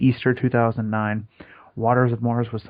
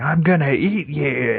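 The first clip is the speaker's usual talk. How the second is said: very slow, drawn-out comic voice; 4 semitones higher, 3 dB louder than usual. Imagining a character from a comedy film saying a line: Fat Bastard voice. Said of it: "I just hear Fat Bastard saying".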